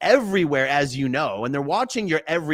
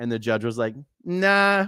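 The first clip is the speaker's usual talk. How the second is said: ordinary delivery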